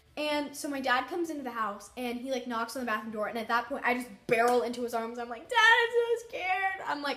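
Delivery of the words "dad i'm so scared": mock sobbing, very high, loud, very slow, drawn-out. Retelling begging dad for help after a scare: retelling own sobbing. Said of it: "I'm sobbing".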